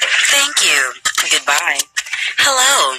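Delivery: low automated navigation-assistant voice. Speaker showing that they know how to do Siri: Siri voice. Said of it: "I know how to do Siri".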